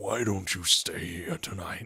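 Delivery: gruff man-of-the-house voice. Retelling what the man of the house said: gruff voice. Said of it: "he's got a really gruff voice".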